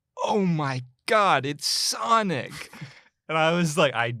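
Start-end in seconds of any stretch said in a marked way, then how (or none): 0.3-2.7 put-on very slow, drawn-out, full-lung kid's yell. Retelling a kid shouting during the movie's final close-up, imitating a kid yelling. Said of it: "from the top of his lungs go".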